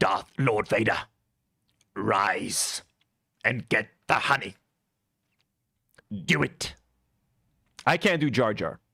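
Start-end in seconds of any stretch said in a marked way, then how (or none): 0.0-6.7 dark, low, commanding voice. Doing Star Wars lines that chat requested: Palpatine voice. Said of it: "Palpatine lines quickly that I can do".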